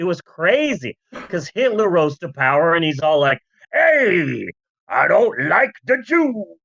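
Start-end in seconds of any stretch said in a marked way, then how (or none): 3.7-6.4 put-on old-timey 1930s everyman voice, period-film style. Imitating Hitler in the thirties: imitating a 1930s man's talk. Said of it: "everyone in the nineteen thirties and forties just talked like that".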